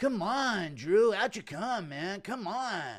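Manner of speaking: high-pitched, very slow, drawn-out voice. Bobby Green knocks on Drew Dober's front door at night; do a Bobby Green impression. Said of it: "Impression of Bobby Green knocking on Drew Dober's front door".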